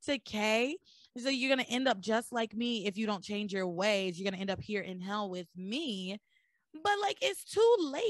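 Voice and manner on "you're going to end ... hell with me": ordinary delivery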